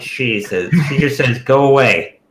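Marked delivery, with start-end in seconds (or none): 1.4-2.1 frightened and grave, higher and louder. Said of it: "She sounds scared and serious".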